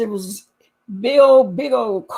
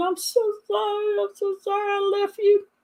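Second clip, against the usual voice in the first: very high, mock tearful crying voice; 10 semitones higher, 5 dB quieter than usual. Retelling an aunt's apology after the stabbing, imitating someone crying. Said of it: "she came in there crying".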